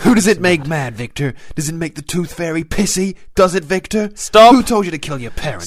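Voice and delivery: loud, high-pitched, relentless shouted yelling. Demanding answers from a man who begs him to stop: yelling. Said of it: "Stop yelling!".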